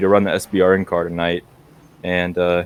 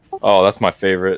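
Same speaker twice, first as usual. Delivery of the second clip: sarcastic delivery. Answering that short track racing comes next week: sarcastic. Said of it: "I'm being sarcastic".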